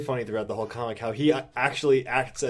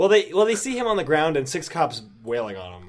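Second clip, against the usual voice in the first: usual speaking voice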